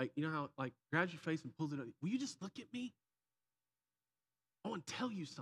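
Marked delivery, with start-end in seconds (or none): 2.0-5.4 put-on high, fed-up, frustrated, pleading little boy voice. Retelling how someone grabbed his face to make him listen; imitating a frustrated plea. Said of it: "he's frustrated".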